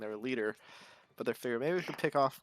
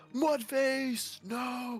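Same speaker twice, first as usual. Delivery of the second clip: very high-pitched, put-on in-character shouted yell; 12 semitones higher than usual. Voicing a rider knocked off his horse: in-character yell.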